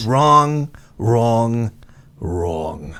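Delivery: deep, raspy voice, pitched low. Trying the impression raspier and deeper as advised: raspier, deeper Trump impression. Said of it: "A little like this".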